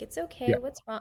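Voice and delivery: caring, soothing, comforting voice like a mother. Retelling a six-year-old daughter soothing a crying baby: imitating motherly comforting. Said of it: "you hear her talking to him like a mother".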